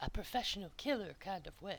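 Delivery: hushed whisper. Describing the boss in character, leaning in close: whispering. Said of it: "leans in real close and whispers".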